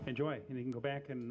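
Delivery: ordinary delivery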